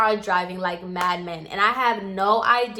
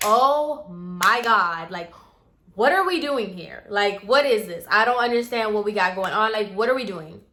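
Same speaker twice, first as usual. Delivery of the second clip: imitated panicked, freaked-out voice. Retelling being taken to a trailer at night: retelling own panic. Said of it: "I'm freaking out".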